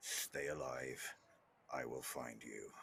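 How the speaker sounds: very deep, very low, hushed, under the breath. Voicing a character handing over a potion before fleeing: low voice. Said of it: "says in a low voice".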